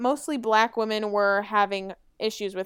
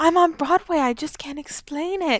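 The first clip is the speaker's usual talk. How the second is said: odd put-on British child voice, much higher pitched; 7 semitones higher, 5 dB louder than usual. Retelling what a girl from New York said, in a weird British child voice. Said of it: "she talks like this weird British child".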